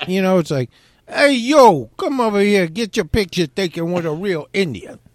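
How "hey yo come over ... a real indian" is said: imitated New Jersey accent. Recalling a photo-op guy in Gatlinburg, the speaker imitates him: New Jersey accent. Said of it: "he's got like a New Jersey accent".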